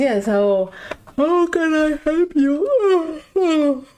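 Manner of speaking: very drawn-out, very slow, very high yawning speech. Voicing a shopkeeper just woken up, yawning while speaking. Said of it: "He's yawning at the end".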